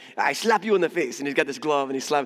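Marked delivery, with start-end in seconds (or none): 0.2-1.2 comic, cartoon-style French accent. Mimicking a cartoon character slapping someone, in a cartoon French accent. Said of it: "some cartoon that's like got a French accent and he's like".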